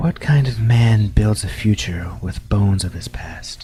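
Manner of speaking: put-on woman's voice. Voicing a voice that the player hears: put-on female voice. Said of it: "a female voice go".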